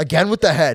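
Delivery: loud, fast, exasperated tone.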